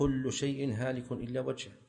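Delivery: ordinary delivery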